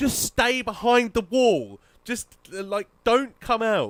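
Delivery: re-enacted screaming. Recounting screaming over the mic at another player, re-enacting a scream. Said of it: "I'm just screaming".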